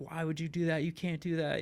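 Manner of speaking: put-on worked-up, screaming scolding cry. Retelling the dad screaming at the mom: imitating dad screaming. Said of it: "my dad's standing there screaming at her".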